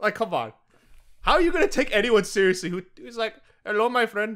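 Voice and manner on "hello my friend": stock comic, put-on Indian accent. Mocking how people with Indian accents talk: imitating an Indian accent. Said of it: "Indian accents?".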